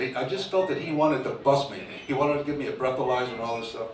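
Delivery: ordinary delivery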